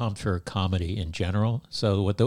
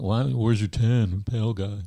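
dopey, dim-witted, put-on dumb voice. Speaker retelling what he used to say back then, generic dumb voice. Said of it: "I was just doing the generic dumb voice".

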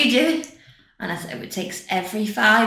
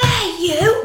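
put-on piercing child's shriek, very high and shrill; 12 semitones higher, 3 dB louder than usual. Parent retelling her daughter screaming at someone in public: imitating Bella screaming. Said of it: "and she's screaming".

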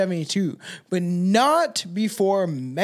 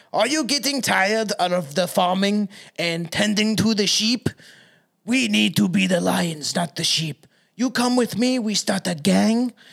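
put-on French-accented voice. Retelling how a murderer recruited shepherds into a gang, the speaker uses a french accent. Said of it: "how do you do a French accent?".

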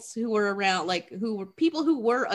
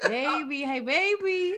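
put-on high catcall with "baby" drawn out long; 5 semitones higher than usual. Joining in retelling how the construction guys call to her: imitating construction workers catcalling. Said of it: "these construction guys are hitting on her".

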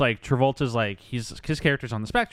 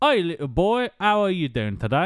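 put-on old-fashioned posh British accent, high; 7 semitones higher, 4 dB louder than usual. Describing a British-guard type on the street greeting a boy: British guard character voice. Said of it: "stands on the street and says like".

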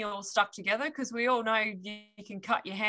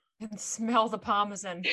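plain

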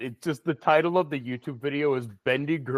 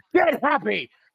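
put-on yelling, higher and louder; 11 semitones higher, 6 dB louder than usual. Imagining an old war veteran cheering on students: imagined screaming. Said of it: "I just imagine an old World War One vet with a limp or a missing leg screaming".

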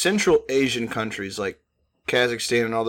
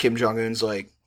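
ordinary talk, nothing marked

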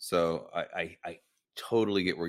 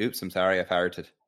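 put-on Irish-accented speech; 5 dB louder than usual. Chatting about accents, trying the one line they can do in an Irish accent. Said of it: "The only thing I can say with an Irish accent is".

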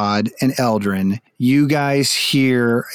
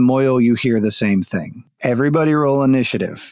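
usual speaking voice

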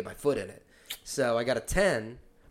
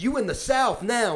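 shrill, loud, high-pitched, aggressive screaming; 11 semitones higher, 6 dB louder than usual. Recounting a man getting in people's faces, retelling his scream. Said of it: "And screaming".

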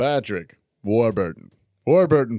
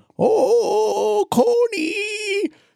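very high-pitched celebrity-style voice. Retelling a story, then calling out in an Adam Sandler impression. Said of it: "Do I do a good Adam Sandler?".

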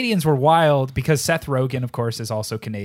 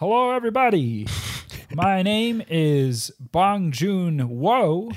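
imitated frog puppet voice; 6 semitones higher than usual. Playing a fan accepting an award on stage: sounds like Kermit the Frog. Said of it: "He sounds like Kermit the Frog".

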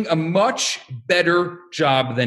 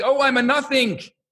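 high, screaming cry; 7 semitones higher than usual. Act out two older students in the study hall late at night, imitating someone screaming. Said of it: "two older students screaming".

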